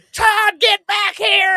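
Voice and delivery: mock shrieking, pitched very high, drawn out. Recounting todd leaving his mom tipped back in the recliner: retelling his mom's scream. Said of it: "she's screaming".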